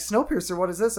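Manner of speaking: ordinary talk, nothing marked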